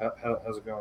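very quiet, low, stumbling mutter under the breath. Acting out how people greet each other at the door: imitating a greeting under breath. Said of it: "it's always under your breath".

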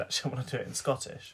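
ordinary delivery

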